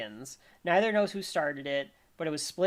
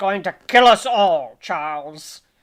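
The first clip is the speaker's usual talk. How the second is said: very loud, booming, full-volume delivery; 3 semitones higher, 14 dB louder than usual. Acting out a character who slips into a villain voice: Magneto voice. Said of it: "this character that he calls Magneto".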